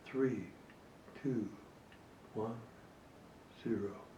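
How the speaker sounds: each number hushed further, fading to very soft. Teacher demonstrating the countdown used to manage a class, each number slightly quieter. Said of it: "With each number being a slightly more quiet tone".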